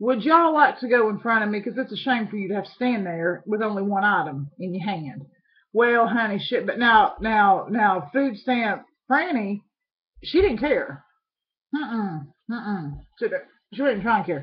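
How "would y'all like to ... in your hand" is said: usual speaking voice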